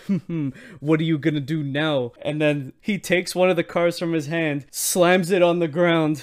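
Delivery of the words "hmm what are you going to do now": put-on laughing mockery. Acting out the rival card player: acting out a laughing taunt. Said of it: "he's laughing at him".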